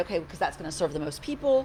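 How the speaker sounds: usual speaking voice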